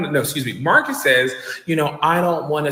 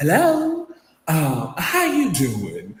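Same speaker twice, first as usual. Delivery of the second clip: slow, sweet, unhurried, sing-song Southern belle drawl. Retelling a phone call where Phaedra comes on the line, imitating Phaedra's Southern belle voice. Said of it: "angelic voice of a Southern belle".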